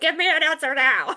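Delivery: high, bossy, demanding shout. Showing how someone unintentionally comes across as bossy to others, bossy shouting. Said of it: "like you're shouting at them".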